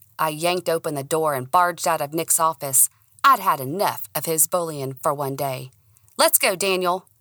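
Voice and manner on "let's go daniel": sharp, snappish, snapping voice. A narrator reads their own line to Daniel, storming out of an office, snapping.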